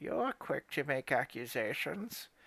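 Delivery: put-on acted elderly woman voice. Voicing a character while narrating a story, old lady voice. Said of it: "I'll do my best old lady voice".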